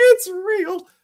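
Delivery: thrilled exclaim, very high and loud. Retelling opening the first shipment of a first book: imitating own overjoyed self. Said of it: "just being overjoyed by the fact".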